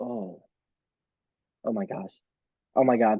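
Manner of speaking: flustered, panicking voice. Answering a quick question about dinner guests, flustered panic. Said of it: "I'm panicking".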